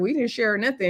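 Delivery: ordinary delivery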